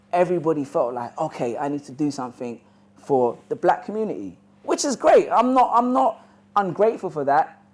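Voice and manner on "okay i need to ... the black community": usual speaking voice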